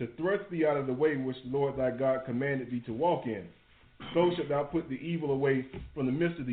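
normal talking voice

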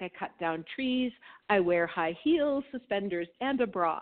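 ordinary talk, nothing marked

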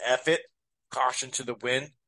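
ordinary talk

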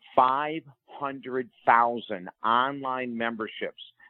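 very slow, deliberate delivery.

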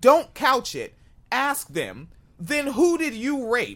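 yelling. Telling the listener how to question someone: yelling at the listener. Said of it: "Yes, I'm yelling at you".

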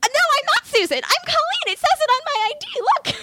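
freaked-out voice shooting very high. Retelling insisting to a man she is not Susan; high voice. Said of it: "my voice gets high".

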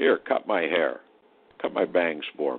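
deep, resonant put-on voice. Retelling how an actor friend called him over: imitating a deep resonant voice. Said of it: "had this great, deep, resonant voice".

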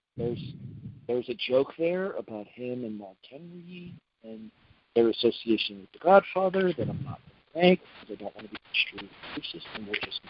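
low, quiet mumble under the breath. Holding back a joke about a wrestler, deliberately mumbling. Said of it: "you're mumbling".

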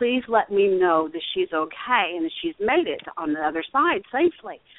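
plain

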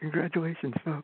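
very creepy, eerie, unsettling delivery. Greeting the listeners as a caller on the show: said very creepily. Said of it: "way to say that very creepily".

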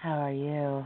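very seductive, sultry bedroom voice. A podcast co-host greets the listeners, in a seductive bedroom voice. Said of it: "Bedroom voices".

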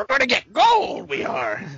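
put-on very high, grizzled old gold prospector voice. After talking about doing sports-writer impressions, the speaker uses a grizzled 1860s prospector voice. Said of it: "I also always sound like a grizzled 1860s prospector".

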